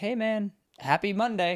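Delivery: friendly, easygoing, high and unhurried. Imitating a friendly insurance company guy answering the phone: imitating a nice guy. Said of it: "some nice guy at this insurance company who's like".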